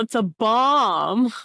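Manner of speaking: urgent called-out voice, the word bomb drawn out. In a role-played scene, with everybody across the room, the character warns them: yelling. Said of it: "I yell".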